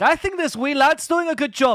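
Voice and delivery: put-on very high, broad-sounding Scottish accent. Retelling how you talked when people mistook your words for Spanish, Scottish accent. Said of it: "I spoke like that".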